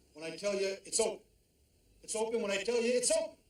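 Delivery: high-pitched yelling. Ordering the store helper to keep the door closed: yelling. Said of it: "Don't have to yell".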